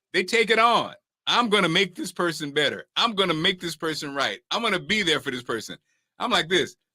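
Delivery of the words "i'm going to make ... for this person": ordinary talk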